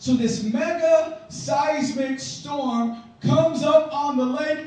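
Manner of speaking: slow, loud, booming, dramatic building delivery.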